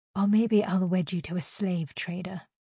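ordinary delivery, nothing marked

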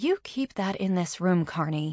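ordinary delivery

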